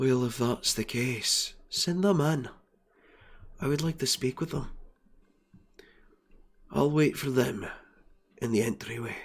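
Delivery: smooth, soft, silky, elegant, purposeful voice. Narrating a scene, voicing the boss as six guests ask to see him; elegant voice. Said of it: "in a very elegant voice".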